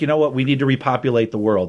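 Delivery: ordinary talk, nothing marked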